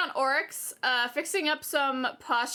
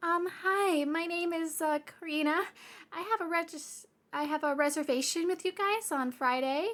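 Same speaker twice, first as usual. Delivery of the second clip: sugary, extra-nice, sweet, put-on polite voice; 3 semitones higher than usual. Retelling a phone call to a manager about a reservation: imitating her own sweetest voice. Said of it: "I put on, like, my sweetest voice".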